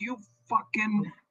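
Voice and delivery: mock raging scream, very high-pitched. Retelling screaming at the old publisher on the phone: imitating own screaming. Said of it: "screaming at my old publisher".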